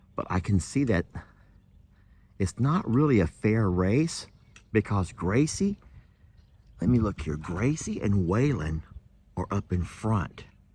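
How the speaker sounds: quiet voice, quiet pace. Approaching the racers so they don't know the speaker is coming, talking quietly. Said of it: "I'm talking quietly".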